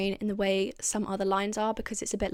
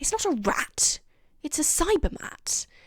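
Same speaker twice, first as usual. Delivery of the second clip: put-on disgusted voice, higher; 6 semitones higher than usual. Quoting a favourite line from the episode: imitating the Doctor's disgust. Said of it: "he looks so disgusted".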